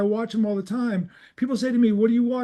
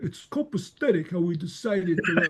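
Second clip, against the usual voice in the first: put-on mob guy voice, slower; 4 semitones lower, 3 dB quieter than usual. Imitate a man whose English you can hardly believe is native, in a mob guy voice. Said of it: "like listening to a mob guy go".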